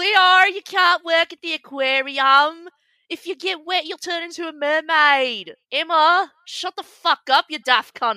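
put-on Australian accent. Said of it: "so sorry to our Australian followers".

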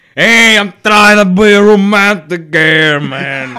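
loud, exaggerated put-on Brooklyn accent. Taking a turn at the same put-on voice: brooklyn accent. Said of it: "that Brooklyn charm".

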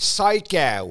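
psycho pronounced with a Philadelphia accent. Showing a favorite word to say in a Philadelphia accent. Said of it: "I love to say in a Philadelphia accent".

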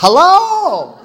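high-pitched, loud yelling.

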